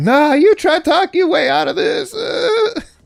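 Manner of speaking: very high, weepy, sobbing crying-woman voice. A voice actor shows off one of their character voices: crying lady voice. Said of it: "This is my this is my crying lady voice".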